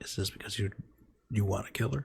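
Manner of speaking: hushed, whispered aside under the breath. Asking a question in character during a game: whispering in character. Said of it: "I whispered to Chris".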